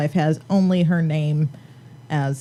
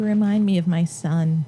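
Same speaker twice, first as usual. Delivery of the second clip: usual speaking voice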